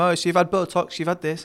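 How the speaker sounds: usual speaking voice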